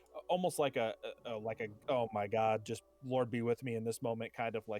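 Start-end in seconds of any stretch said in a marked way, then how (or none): 1.9-4.4 sarcastic, insincere, half-hearted throwaway tone. Voicing a caged character muttering a prayer: sarcastic half-hearted prayer. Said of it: "kind of, like, sarcastic sort of prayer".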